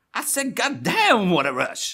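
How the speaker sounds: casual, drawn-out, swooping, sing-song shout. Reading a viewer's request, shouting casually as John Travolta. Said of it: "a la John Travolta in Broken Arrow".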